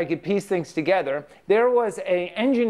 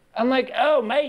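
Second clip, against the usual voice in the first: terrible fake Australian accent, pitched much higher; 6 semitones higher than usual. Speaker shows how he would mimic an australian, in a bad australian accent. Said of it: "Terrible accent".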